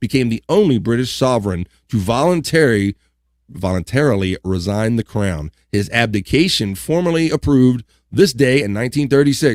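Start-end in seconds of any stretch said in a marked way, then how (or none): none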